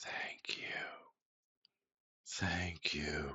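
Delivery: breathy, very soft whisper dying away. A narrator voices a woman as she fades into nothingness, fading whisper. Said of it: "she whispers".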